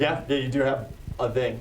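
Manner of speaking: ordinary talk, nothing marked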